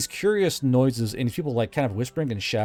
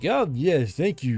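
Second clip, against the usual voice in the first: numb mouth, thick heavy tongue, tongue-heavy speech; 2 semitones higher than usual. Voicing a character whose mouth is going numb: numb mouth, thick heavy tongue. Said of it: "your tongue getting really thick and heavy".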